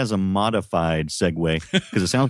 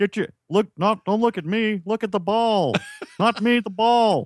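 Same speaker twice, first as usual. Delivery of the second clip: put-on Texan cartoon dad voice, higher; 13 semitones higher than usual. Doing a Hank Hill voice after being asked: Hank Hill voice. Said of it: "You do a pretty good Hank Hill".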